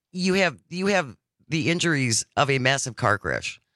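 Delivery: normal talking voice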